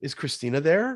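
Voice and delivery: pitch tilts upward on "there". Asking for the person you want to talk to: rising intonation on there. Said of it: "there's this like upward tone".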